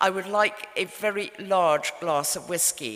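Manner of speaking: ordinary talk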